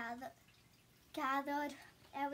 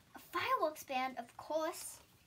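plain reading voice

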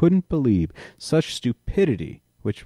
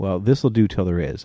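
plain reading voice

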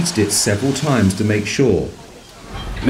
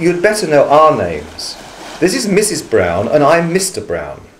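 ordinary delivery, nothing marked

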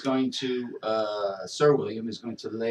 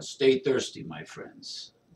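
slow, deliberate, measured commercial sign-off delivery; 2 semitones higher than usual. Imitating the man with the gray beard from the beer ad: Dos Equis man impression. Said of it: "the Mister Dos Equis".

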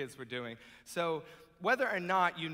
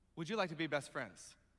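nonchalant, casual, offhand tone, quieter; 6 dB quieter than usual. Retelling an out-of-the-blue question at the lockers: imitating a nonchalant question. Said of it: "very nonchalant".

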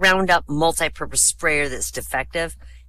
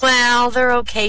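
glum, downcast, gloomy, raised voice; 7 semitones higher, 5 dB louder than usual. Retelling a sister's reply about her new glasses: imitating a gloomy reply. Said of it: "staring at herself in the mirror gloomily".

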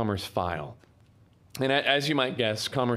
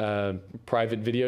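normal talking voice

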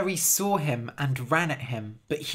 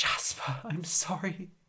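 soft, hushed, barely voiced whisper; 6 dB quieter than usual. Narrator reading Harold's line as he closes his eyes, whispered. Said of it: "Harold closed his eyes and whispered".

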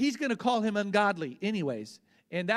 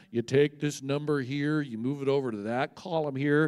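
low, flat, droning monotone throughout; 6 semitones lower than usual. Imitating how he talked back in the early 90s, flat monotone impression. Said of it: "That's how he talked, monotone the whole time".

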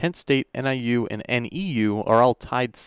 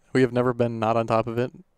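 ordinary talk, nothing marked

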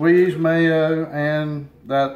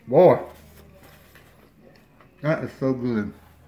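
muffled speech while chewing, mouth full; 2 semitones lower than usual. Taking a big Fourth of July bite, talking with mouth full. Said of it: "And I'm talking with my mouth full".

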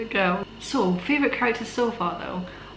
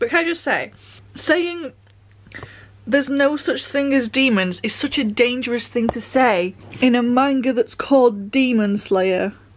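words pushed out while chewing, mouth full of food; 3 semitones higher, 5 dB louder than usual. Reading manga on an app while still eating, talking with mouth full. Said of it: "I've still got food in my mouth".

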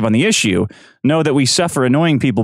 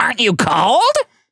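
piercing, shrill, pitched-up woman's voice; 8 semitones higher than usual. Retelling a woman at the office asking the speaker a question; shrill woman's voice. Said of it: "accosted by a shrill voice saying".

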